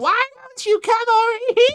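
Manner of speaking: put-on shrill, very high, very loud small-child voice. Discussing a show's voice acting, quoting the higher-pitched character in a small child voice. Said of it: "grown man doing his best impression of a small child".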